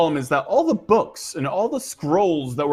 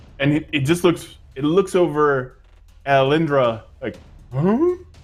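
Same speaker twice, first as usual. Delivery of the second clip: ordinary talk, nothing marked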